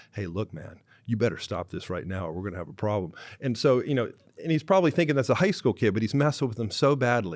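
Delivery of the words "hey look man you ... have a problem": whispered, quieter voice. Retelling a player's warning to a prankster: imitating a whisper. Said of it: "whispered to him".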